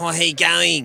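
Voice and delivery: rough, loud drawl. Imitating a comedian after discussing his stage voice: Hughesy impression. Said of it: "That's a solid analysis of Hughesy".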